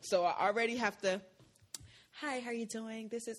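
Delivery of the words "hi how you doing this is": polite, softened, toned-down pleasant voice. Showing how greetings sounded at previous jobs: imitating own softened pleasant voice. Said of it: "I have to soften my voice".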